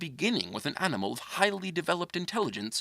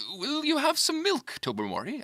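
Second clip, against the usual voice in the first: tense, strained, very high-pitched voice; 11 semitones higher than usual. Reading Lady Blemley offering milk to the cat Tobermory, in a rather strained voice. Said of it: "in a rather strained voice".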